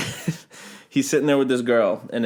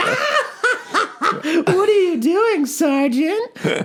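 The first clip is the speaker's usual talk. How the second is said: put-on giggly, laughing heckle, very high, stretched out. Retelling laughing at a sergeant: imitating own heckling.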